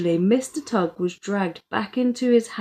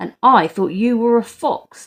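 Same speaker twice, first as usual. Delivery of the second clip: loud, growling, growled delivery; 3 semitones higher, 6 dB louder than usual. Narrator reads Dad's reply to Mister Tugg: growling. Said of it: "Dad growled".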